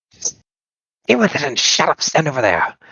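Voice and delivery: raspy, high, swooping female goblin voice. Narrating a goblin's reply to another goblin, in a raspy female goblin voice. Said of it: "female, raspy Goblin voice".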